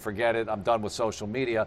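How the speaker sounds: ordinary delivery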